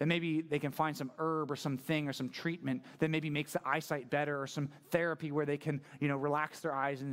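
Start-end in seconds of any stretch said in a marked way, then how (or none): none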